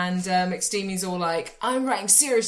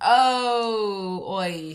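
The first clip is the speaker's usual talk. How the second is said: relaxed, lazily drawn-out oh. Retelling a film scene, doing the relaxed boss: imitating Alan Arkin, relaxed. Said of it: "Alan Arkin is his really relaxed boss who's like".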